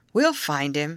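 ordinary delivery

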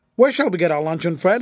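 plain reading voice

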